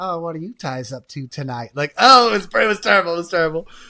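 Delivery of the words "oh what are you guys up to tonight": unsettling, creepy voice. Retelling arriving at a sketchy hotel, imitating a creepy hotel clerk. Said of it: "creepy clerk and everything".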